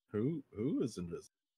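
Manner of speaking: blank, puzzled, bewildered dim-witted voice. Retelling going into himbo mode when someone mentions Roscoe: acting confused in himbo mode. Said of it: "I go into himbo mode".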